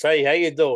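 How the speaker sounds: put-on loud old-man Brooklyn accent. Describing the man who came up with a movie name, showing how he talks in an old brooklyn guy accent. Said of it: "He talk like this".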